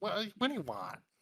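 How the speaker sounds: squeaky, high, whiny little-creature voice. Imitating a small creature while describing his voice, high-pitched whiny voice. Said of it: "he's got a high pitched, whiny voice of like".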